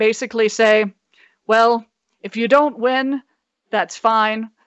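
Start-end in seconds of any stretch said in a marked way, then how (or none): 1.5-4.5 put-on, mock-ominous tone, encouraging. Imagining Sarah giving the team a speech: imitating Sarah, mock-ominous tone. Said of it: "But in the tone of voice, that means".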